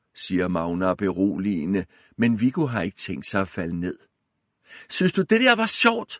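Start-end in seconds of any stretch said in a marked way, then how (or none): 4.9-6.1 shrill, very high-pitched shrieking scream. A boy confronts someone who frightened the children; screaming. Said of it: "skriger han".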